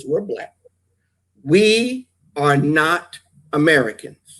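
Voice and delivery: very slow, low, deliberate, spelled-out emphasis. Host telling the listeners a point, said very slowly. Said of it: "I'm going to say this very slowly".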